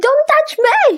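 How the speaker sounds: hysterical, high, panicked screaming cries. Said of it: "Calm down".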